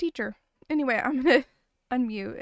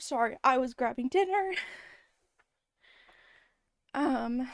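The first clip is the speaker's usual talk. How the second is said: out of breath, breathing hard. Streamer welcoming viewers arriving from a raid, out of breath. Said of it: "now I'm very out of breath".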